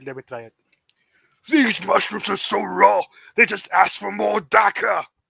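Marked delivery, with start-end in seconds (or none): 1.5-5.0 creaky, rough, raised fantasy orc voice. Trying out another speaker's quoted line: orc voice. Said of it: "I can do orcs for the rest".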